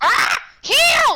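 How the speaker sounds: put-on high, swooping dinosaur voice. Announcing the character's next move during play, in a dinosaur voice. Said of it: "in my in my dinosaur voice".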